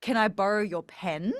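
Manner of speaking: pitch goes up on the word pen. Example question showing question intonation: rising intonation on pen. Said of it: "Like you go up at the end".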